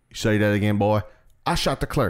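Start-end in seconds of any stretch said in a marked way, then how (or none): 1.5-2.1 put-on New York accent at a much higher pitch. Retelling a scene from My Cousin Vinny, quoting him in a New York accent. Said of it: "he's just saying it in a New York way".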